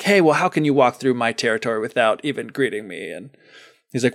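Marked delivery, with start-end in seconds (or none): 0.0-3.1 put-on sassy dog voice. Retelling a folktale, quoting a dog who challenges the traveler: put-on sassy dog voice. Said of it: "the dog's kinda giving him a little sass".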